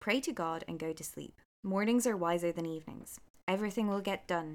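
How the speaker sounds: ordinary delivery, nothing marked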